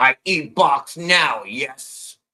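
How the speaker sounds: loud, blunt, very slow caveman speech. Asked to say it again, repeating the imagined reply; caveman voice. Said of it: "how I would think a caveman would say it".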